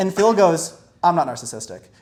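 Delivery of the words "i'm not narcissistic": put-on stern voice, pitched lower. Retelling a friend's flat denial at the table: imitating someone stern. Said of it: "the sternness of Phil".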